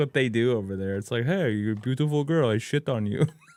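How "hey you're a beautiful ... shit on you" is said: put-on accent from Dubai. Imitating people in Dubai addressing a girl: mock Dubai accent. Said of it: "that's their accent".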